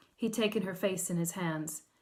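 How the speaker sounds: ordinary delivery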